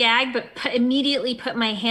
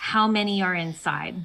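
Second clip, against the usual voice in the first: ordinary talk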